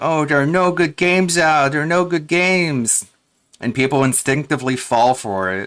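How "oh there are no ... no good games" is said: whining, complaining tone. Mocking a man who sits there complaining, in a mock whine. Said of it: "he just sits there crying, bitching, moaning".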